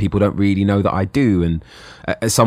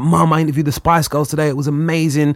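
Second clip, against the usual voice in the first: put-on thrilled schoolboy voice, high and gushing; 8 semitones higher than usual. Retelling coming home to his mum at twelve: imitating his excited twelve-year-old self. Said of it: "I'd come home from film and I'd be like".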